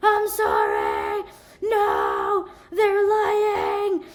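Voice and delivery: mock breathless panting words. Retelling what the caught suspect said to police: imitating someone out of breath. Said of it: "he sounded like he was getting exercise".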